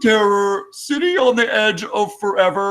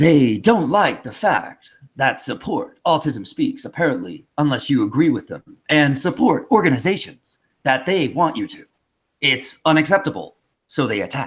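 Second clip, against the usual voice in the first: put-on dramatic actor voice, lower; 7 semitones lower than usual. Reading a tweet aloud as William Shatner when asked. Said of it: "we'll try again with the next one".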